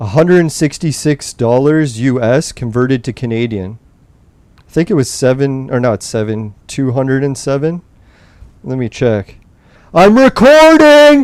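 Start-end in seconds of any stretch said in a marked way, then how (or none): 9.9-11.3 very high, loud, shrill shout. Speaker yells so their mom hears the recording has started: yelling. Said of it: "sorry to yell like that".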